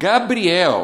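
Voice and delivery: calling out loudly at a high pitch.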